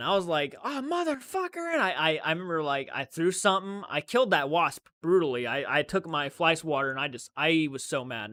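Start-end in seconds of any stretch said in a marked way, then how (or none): 0.6-1.7 play-acted piercing, shrill, very high, loud yell. Retelling being stung by a wasp: imitating own loud yell. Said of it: "I yelled".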